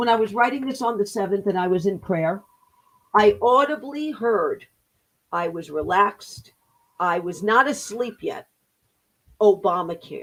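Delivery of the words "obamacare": mock commanding, authoritative tone. Retelling a voice heard aloud during prayer: imitating a very authoritative voice. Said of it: "like in a very authoritative voice".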